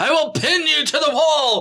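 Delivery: mock wild madman voice, very high, loud, crazed. Acting out a king hurling a spear at a harp player: acting out a crazed yell. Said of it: "some crazy motherfucker that steps out of the room like".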